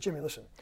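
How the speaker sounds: calm low aside.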